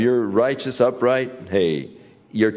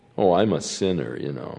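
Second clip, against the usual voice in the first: low, flippant, scoffing, mocking tone; 4 semitones lower, 3 dB quieter than usual. Explaining a proverb, speaker acts out a person mocking sin, mimicking someone mocking sin. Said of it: "they say it in a mocking way".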